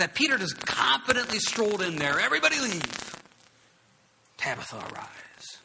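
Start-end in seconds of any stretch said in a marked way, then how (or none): 2.2-5.6 slow, confident, assured and authoritative. Retelling how Peter raised Tabitha, confident Peter voice. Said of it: "Probably changed his voice like that too".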